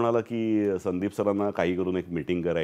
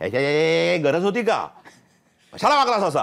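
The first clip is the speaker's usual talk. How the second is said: put-on strict scolding voice, higher and louder; 9 semitones higher, 5 dB louder than usual. Retelling how a strict father would scold the children: imitating a strict father scolding. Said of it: "आम्हाला जर नक्कल करून दाखवाय".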